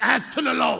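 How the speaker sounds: mock emphatic, slow, creaky reading, final words stressed. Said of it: "why you read the last part the loudest?".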